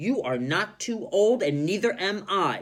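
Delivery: confident storybook delivery. Reading a story aloud, voicing a character's reply, confident. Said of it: "She's confident".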